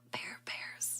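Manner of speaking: barely-there, very soft whisper. Retelling own words from a video: imitating own soft whisper. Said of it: "I whispered very softly".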